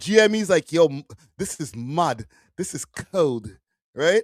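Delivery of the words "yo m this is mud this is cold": put-on respectful, slow, drawn-out UK accent. Mimicking the other speaker's accent while retelling his reaction: imitating a friend's accent. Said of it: "I'm not making fun of your accent".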